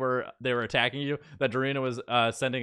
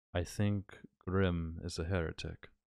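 soft, half-whispered under the breath; 7 semitones lower, 8 dB quieter than usual. Voicing a character lifting his head after being restored: half-whispering. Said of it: "he whispers".

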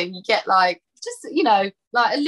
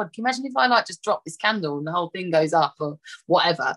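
ordinary talk, nothing marked

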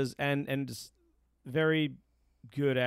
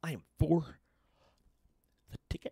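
unpolished, rough put-on senator voice; 2 semitones higher than usual. Talking about a politician, doing a Cory Booker impression. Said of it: "Is that your Cory Booker impression?".

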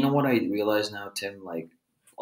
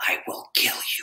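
put-on gritty voice. Retelling a fighter's answer with conviction: imitating someone saying it with grit. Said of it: "she said it with such grit".

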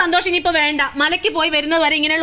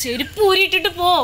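plain

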